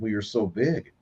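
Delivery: ordinary talk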